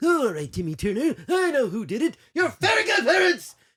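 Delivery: very high, loud, shrill, swooping cartoon character voice. Explaining how he came up with a cartoon voice, doing the Mr. Crocker voice. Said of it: "So Mister Crocker's voice is".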